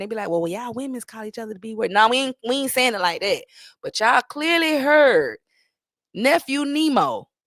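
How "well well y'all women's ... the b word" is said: man's self-justifying, hedging, stalling delivery. Mocking how men justify using a word: imitating men justifying themselves. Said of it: "men try to justify ... they be like".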